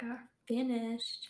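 soft, slow whisper.

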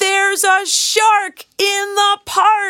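very high, loudest full-volume alarmed shout. Narrating a character who spots what looks like a shark fin, crying out loudly. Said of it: "In his loudest voice, Timothy cries".

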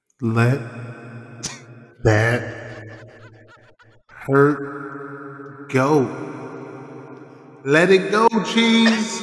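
grand, divine God voice from on high. Consoling cheese after a cancelled date, the speaker does a god voice.

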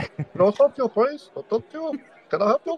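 put-on Indian accent. Asked on the spot to do an Indian accent. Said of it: "can you do an Indian accent?".

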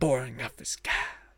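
slow, whispered words.

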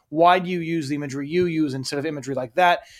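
ordinary delivery

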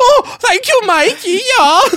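high-pitched, very drawn out, slow voice. Copying another speaker's impression of Mikey's girlfriend: imitating Mikey's girlfriend. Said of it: "And she sounds locked up".

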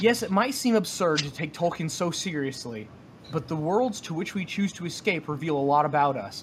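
normal talking voice

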